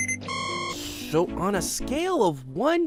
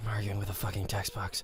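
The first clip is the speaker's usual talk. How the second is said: muttering under the breath, much lower and quieter; 8 dB quieter than usual. Character arguing with an on-screen text box: muttering under his breath. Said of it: "*under his breath.*".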